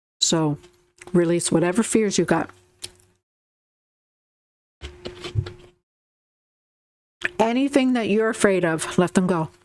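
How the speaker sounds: speaking with food in mouth. Giving guidance to listeners while eating, munching while talking. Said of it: "I'm munching away".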